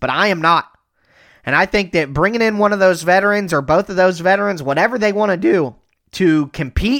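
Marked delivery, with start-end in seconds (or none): 4.6-7.0 breaking voice, cracking mid-phrase. Discussing veteran kickers competing with the young players, voice cracking. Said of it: "did you hear my voice crack there?".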